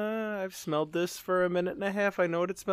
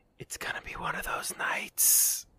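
barely audible, very quiet whispered aside. Storyteller voicing Cassander refilling his glass, Cassander whispering to Dane. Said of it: "whisper to him".

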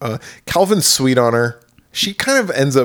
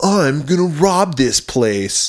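very slow, deliberate delivery, each word dragged out; 4 semitones higher than usual. Retelling a movie scene about a robber at a bowling alley: Linnea Quigley impression. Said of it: "That was pretty good Linnea Quigley".

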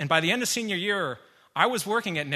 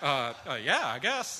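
put-on slow, dazed, foggy, stumbling speech; 2 semitones lower, 4 dB quieter than usual. Retelling a bike crash, quoting own reply: imitating own dazed concussed reply. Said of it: "I had just received a concussion".

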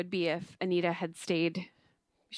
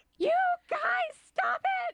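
put-on shrill, whiny yell, very high pitched. Imitating an actress yelling at two people while giving birth: imitating Jane's whiny yell. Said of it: "yelling at them both, and it's just very whiny".

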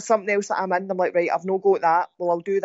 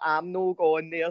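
put-on speaking with an Ayrshire accent; 3 semitones lower, 4 dB quieter than usual. Act out folk moaning about not going to a gym, in an Ayrshire accent. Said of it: "That's my Ayrshire".

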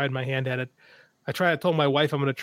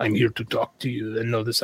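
mock seductive vampire voice, lower; 4 semitones lower than usual. Talking about vampire stories, the speaker slips into a mock seductive vampire voice. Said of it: "I don't know why I did that voice".

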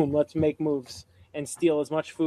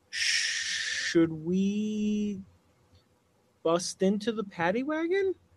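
quiet, slow whisper, drawing out we, pitched up; 6 semitones higher, 5 dB quieter than usual. Asking friends in character whether to break into the wagon: hushed tones. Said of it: "in hushed tones".

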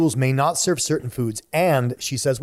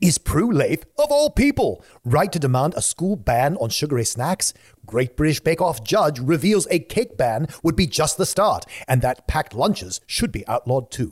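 put-on British accent; 2 semitones higher than usual. Reading a long tabloid headline aloud to the others: put-on british voice. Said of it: "which I will let [name] read in his British voice".

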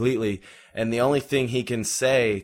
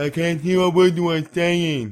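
loud, high, mocking deaf-person voice; 8 semitones higher, 5 dB louder than usual. Retelling a man in a dark, loud place mimicking a deaf person; mocking deaf-person voice. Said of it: "kind of mimicking a deaf person was like".

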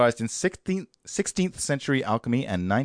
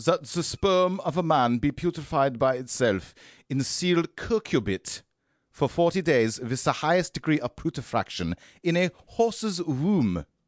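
calm, non-angry put-on German accent; 4 semitones higher than usual. Asked for non-angry german, reading a text aloud in a non-angry german accent. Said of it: "non-angry German".

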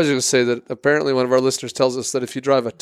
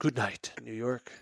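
put-on radio announcer voice, quieter; 14 dB quieter than usual. Repeating another speaker's sign-off, in a radio host voice. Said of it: "Like you think you're on like CBS New York".

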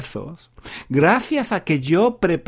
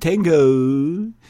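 tengo said in an English accent, drawn out. Imitating university students learning Spanish, tengo said with an English accent. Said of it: "Hablan con acento inglés. Dicen tengo".

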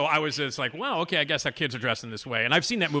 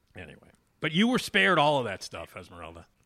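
ordinary talk

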